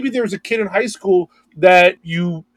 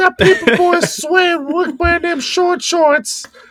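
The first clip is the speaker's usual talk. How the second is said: put-on old man voice, higher; 10 semitones higher than usual. Imitating a character from Family Guy: Family Guy old man voice. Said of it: "he's the old man from Family Guy where he's like".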